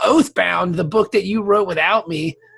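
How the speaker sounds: resentful, teasing, jokingly bitter tone. Speaker addresses the man who wrote a book without him: mock bitter. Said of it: "That sounded very bitter".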